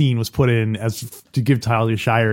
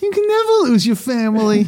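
very high-pitched delivery; 13 semitones higher, 4 dB louder than usual. Acting out a movie character's line about forgiving a brother: imitating a movie character's line. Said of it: "And she doesn't say it like that".

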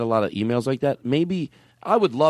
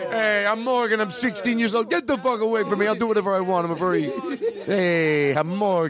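very high-pitched put-on teenager voice; 9 semitones higher than usual. Mocking a sixteen-year-old who tells everyone off: imitating Morgan. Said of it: "I hate to break character so much".

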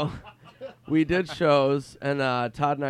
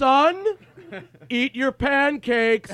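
play-acted, very high, very loud, swelling, drawn-out raised voice; 12 semitones higher, 5 dB louder than usual. Retelling a pretend-dad bit over pancakes: imitating someone getting louder. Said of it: "his voice gets louder".

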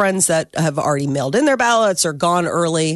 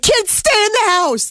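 very high, panicky, frightened voice. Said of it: "And it's like".

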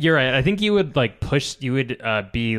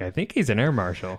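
usual speaking voice

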